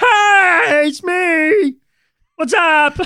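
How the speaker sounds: loud, goofy cartoon voice, pitched way up. Imagining a god showing up mid-scene, in a goofy Peter Griffin voice. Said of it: "some like goofy fucking voice".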